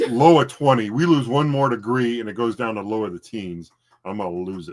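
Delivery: ordinary talk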